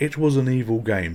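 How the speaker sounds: ordinary talk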